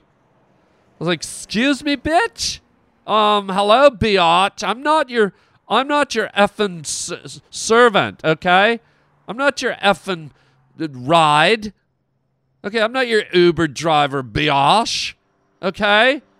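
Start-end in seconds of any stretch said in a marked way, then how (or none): 1.2-16.2 put-on snobby, indignant outburst. Retelling an inner reaction to being mistaken for a ride: imitating own snobby indignation. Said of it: "suddenly I got a little snobby".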